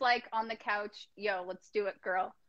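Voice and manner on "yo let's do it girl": put-on casual slangy voice, quieter. Guessing how a husband proposed on the couch, imitating Matt's way of talking. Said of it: "I don't know why he talks like that".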